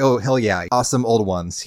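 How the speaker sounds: normal talking voice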